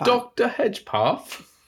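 British accent, pitched very high. Showing how a film character's name sounds in a British accent. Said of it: "if you say it in a British accent".

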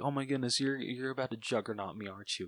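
flustered, stumbling, panicky freaked-out blurt. Retelling a movie scene, imitating Deadpool freaking out. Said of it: "Deadpool's just, like, freaking out".

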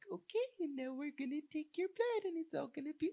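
very high, saccharine, sugary cooing nurse voice. Mocking the sugar-lollipop kind of nurse, sugary-sweet nurse voice. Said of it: "the sugar lollipop kind of nurse who's like".

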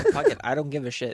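normal talking voice

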